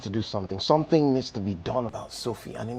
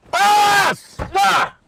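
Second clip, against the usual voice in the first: distressed yelling, much higher, louder; 12 dB louder than usual. In a drama, after being threatened with more torment, shouting in distress. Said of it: "please stop shouting".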